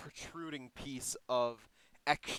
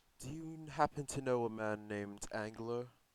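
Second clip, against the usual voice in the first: hushed, gentle, surprisingly quiet, soft voice; 3 semitones lower than usual. A game master voices a large man asking the players a question, in a shockingly quiet voice. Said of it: "asks in a shockingly quiet voice for his size".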